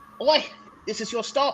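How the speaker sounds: British sea captain voice. Voicing a ship captain announcing the passengers' stop: British accent as the ship captain. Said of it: "the captain is like".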